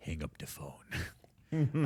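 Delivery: put-on hushed, slow whisper in a French accent. Speaker retelling a movie scene where Leon holds a knife to a man's throat, in Leon's French accent. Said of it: "That was my attempt at a French accent".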